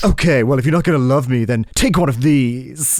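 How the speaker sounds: self-admiring, vain manner. Telling friends about a funny character in a game, doing a Narcissus impression. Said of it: "He talks like this".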